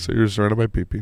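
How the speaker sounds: announcer voice of a public-radio host. Repeating the other speaker's line back in an NPR host voice. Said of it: "You sound like an N P R host".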